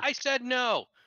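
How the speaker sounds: shrill, very high, loud yell. Voicing the thing blocking the keyhole as someone tries to pick the lock, yelling. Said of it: "It yells".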